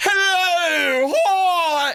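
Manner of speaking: very high, grating, nails-on-chalkboard comic voice. Describing a voice comics have tried, demonstrating a grating comedian voice. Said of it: "this type of voice, comics have tried this voice".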